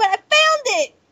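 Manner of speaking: very high-pitched screaming shout. Finding something after searching in a game: shouting and screaming. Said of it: "I know I'm shouting and screaming".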